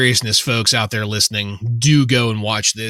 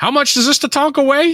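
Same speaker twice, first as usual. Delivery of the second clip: very high-pitched wrestling commentator voice; 3 dB louder than usual. Quoting what he says while Monsoon and Savage are ignoring him, in an Art Donovan voice. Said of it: "my best Art Donovan voice".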